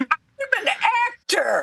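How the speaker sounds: very high, swooping theatrical stage-actor voice. Teasing Howard about how he said lines in the theater, imitating Howard's high acting voice. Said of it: "your voice was here".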